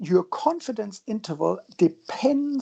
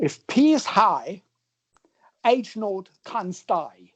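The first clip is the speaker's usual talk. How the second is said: attempted, put-on Australian accent. Explaining a formula, the speaker switches to a put-on Australian accent. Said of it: "now I need to use my best uh, Australian accent".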